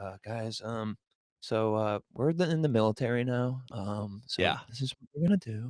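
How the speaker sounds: very slow, low voice, filled with ums. Imitating the head coach talking to the team: imitating a monotone coach. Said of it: "he's a lot more monotone like that".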